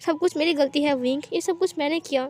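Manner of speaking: ordinary delivery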